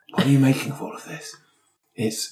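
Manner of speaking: hushed whisper. Looking at a night-vision feed with others: whispering. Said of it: "I don't know why I'm whispering".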